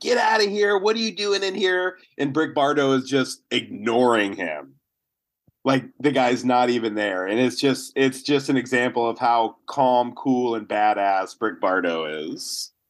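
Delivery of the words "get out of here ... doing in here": mock gunman yelling, fast and high-pitched. Retelling a story where a gunman yells at a man doing laundry, imitating a screaming gunman. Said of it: "the gunman is screaming at him".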